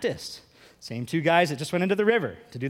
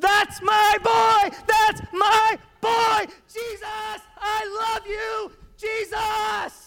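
put-on very high, very slow, proud, booming, drawn-out call; 4 dB louder than usual. Retelling the voice from heaven at the baptism: booming voice of God. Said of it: "you hear a voice booming from heaven".

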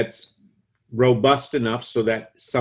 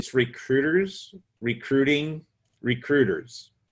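slow, careful, deliberate, word-by-word delivery; 2 semitones higher than usual. Speaker giving the company's name to the listener, said slowly. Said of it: "And I say that slowly".

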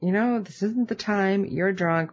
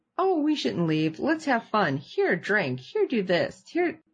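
mock overeager, pushy, swooping cheer; 3 semitones higher than usual. Recapping a party scene, imitating Willow's pushy party attitude. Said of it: "Willow's attitude, different from anything".

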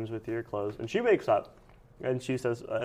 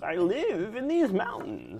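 put-on old lady voice, much higher, louder; 8 semitones higher, 3 dB louder than usual. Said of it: "let me get an old lady voice going".

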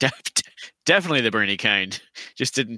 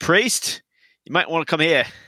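high-pitched, loud, full-voice shout; 8 semitones higher than usual. A player voices their character calling for a priest, shouting. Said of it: "Ziggurat shouts".

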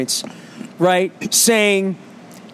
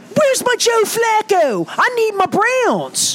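put-on Baltimore accent, very high and slow; 14 semitones higher than usual. Retelling his reaction to finding the wrong game on, in a Baltimore accent. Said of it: "It's pretty good Baltimore accent".

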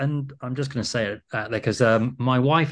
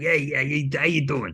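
put-on very strong New York accent. Describing Paul's accent while recalling watching dailies; imitating Paul's New York accent. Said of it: "His accent's like".

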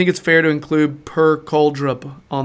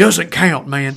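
heavily laid-on put-on Southern American accent; 2 semitones higher, 4 dB louder than usual. Quoting Terry and noticing the accent you just gave him, in a put-on Southern American accent. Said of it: "A Southern American accent".

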